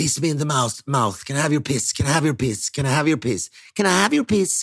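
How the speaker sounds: put-on, babyish baby voice. Retelling what a man on all fours said, the speaker uses a baby voice. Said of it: "pratar med någon slags bebisröst".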